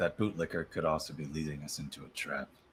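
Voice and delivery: grumbled, to no one in particular. Speaking in character, talking to oneself: said under the breath. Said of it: "I kinda say this under my breath".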